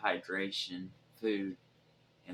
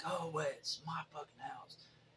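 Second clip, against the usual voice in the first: put-on, high-pitched yelling; 8 semitones higher, 5 dB quieter than usual. Recounting holding a door shut against whoever picked the lock, retelling a yell. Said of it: "I'm yelling through the door".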